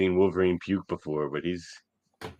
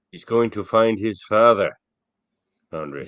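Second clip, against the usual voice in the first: put-on Irish accent, louder; 3 semitones higher, 6 dB louder than usual. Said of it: "I like your Irish accent".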